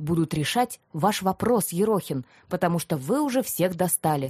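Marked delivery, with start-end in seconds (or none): none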